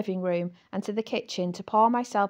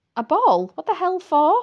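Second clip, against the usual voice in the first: loud, high-pitched gasping outburst; 7 semitones higher, 8 dB louder than usual. The narrator reacts to news of Mr. Lockhart's ball, gasping. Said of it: "I gasped".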